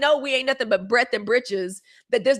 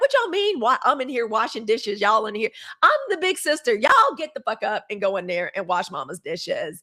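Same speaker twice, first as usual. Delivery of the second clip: play-acted, irritated scolding rant with swooping pitch; 2 semitones lower than usual. Retelling coming home to find the younger kids idle: retelling own annoyed scolding. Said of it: "I was annoyed 'cause I'm like".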